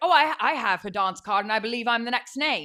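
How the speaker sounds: loud, mediocre put-on British accent. Retelling what a man said, in a put-on British accent. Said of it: "Your British accents are really something".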